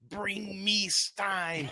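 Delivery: very high, loud calling-out voice. Retelling hearing a stranger in a bathroom stall: imitating Slappy voice. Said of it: "It does the fucking Slappy, like, voice".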